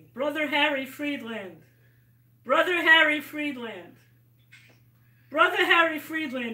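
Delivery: solemn, grave delivery.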